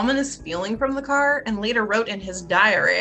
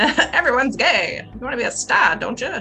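put-on old-time Hollywood accent, higher pitch; 3 semitones higher, 3 dB louder than usual. Joking around mid-conversation, the speaker slips into an old Hollywood voice. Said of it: "This is my old Hollywood voice".

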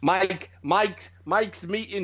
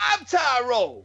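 put-on American accent, pitched up; 5 semitones higher than usual.

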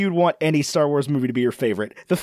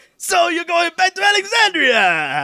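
very high-pitched put-on character-style voice; 13 semitones higher than usual. Retelling what an Uber driver said, in a Watto voice. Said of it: "sounded exactly like Watto".

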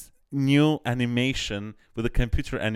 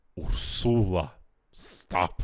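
put-on timid actor voice, lower; 5 semitones lower than usual. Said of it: "he was like".

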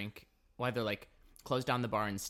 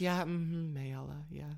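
put-on sweet tone, higher and slower; 7 semitones higher than usual. Retelling how their roommate answered, imitating the roommate's sweet reply. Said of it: "my roommate very sweetly goes".

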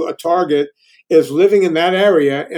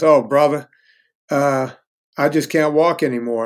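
somber, lower man's voice; 3 semitones lower than usual. Retelling what a customer said when he could not walk: imitating a somber man. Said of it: "kinda somberly says".

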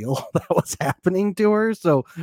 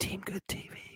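put-on whisper, higher and quieter; 7 semitones higher, 17 dB quieter than usual. Acting out whispering to a producer named Mark: imitating someone whispering. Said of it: "I'd be whispering in Mark's ear".

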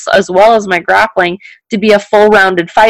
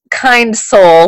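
sarcastic, ironic, mocking delivery. Mentioning someone who tagged them in a post, sarcastic kind soul. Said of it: "I want you to notice the sarcasm when I say kind soul".

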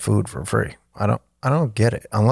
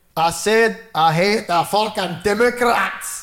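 put-on, very high-pitched fake Scottish brogue; 11 semitones higher than usual. Mimicking a line someone just said, in a fake Scottish accent. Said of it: "That's a Scottish guy".

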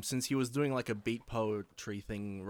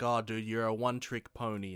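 ordinary talk, nothing marked

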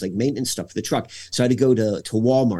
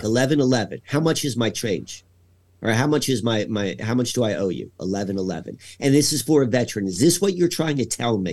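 normal talking voice

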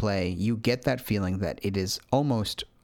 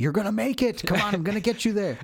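mock, very high, fired-up, excited cheering and yelling; 11 semitones higher than usual. A player recounts urging a complaining game character onward, reenacting yelling at the screen. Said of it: "I'm like yelling at the screen".

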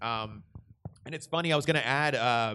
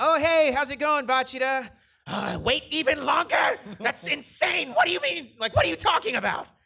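loud, very high-pitched put-on voice; 14 semitones higher, 5 dB louder than usual. Showing the voice given to a character, higher pitched. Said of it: "I kind of gave him like this higher pitched".

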